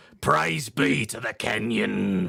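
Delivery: slow, drawn-out, gruff hippie voice. Showing a voice on request: gruff Family Guy hippie voice. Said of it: "he's a very gruff, like, hippie".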